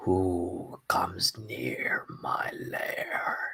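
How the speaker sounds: put-on decrepit old voice, crumbling, breathy whisper. A game master voices an unseen being heard in a player's head: very decrepit old voice. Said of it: "in a very decrepit old voice".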